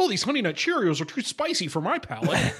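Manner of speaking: put-on grumpy, complaining old-timer character voice. Imitating a friend's dad complaining about cereal: Gary impression. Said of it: "That's my Gary impression".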